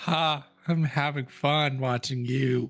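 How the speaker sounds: weird, creepy put-on voice. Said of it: "Don't make it sound like that".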